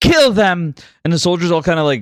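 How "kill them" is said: high, loud, called-out shout. Voicing a character calling to soldiers to attack: calling out an order. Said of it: "As she calls to the soldiers".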